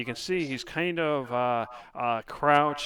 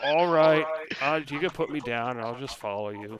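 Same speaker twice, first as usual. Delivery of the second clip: resigned, given-up tone. Voicing a captured healer agreeing to follow: resigned voice. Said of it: "you can tell he sounds resigned".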